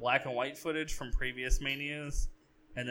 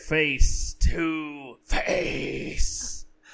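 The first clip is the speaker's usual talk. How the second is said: very loud booming bellow with drawn-out "to"; 2 semitones higher, 8 dB louder than usual. Trying a first attempt at a Vince impression when asked: Vince impression. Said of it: "This is my first attempt at a Vince impression".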